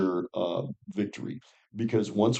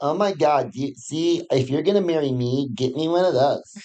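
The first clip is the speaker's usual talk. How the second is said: put-on, mimicked girl's voice; 5 semitones higher than usual. Retelling how girls react to diamond rings, imitating girls. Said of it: "And girls go".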